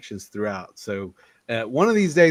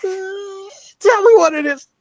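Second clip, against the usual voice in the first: very high-pitched, slow, drawn-out put-on drawl; 7 dB louder than usual. Retelling a comedy bit, imitating Stephen Root. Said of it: "that's a pretty good Stephen Root".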